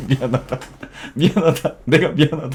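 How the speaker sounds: high, loud, overdone sobbing in a mismatched tone.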